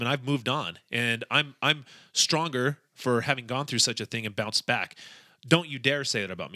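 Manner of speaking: ordinary talk, nothing marked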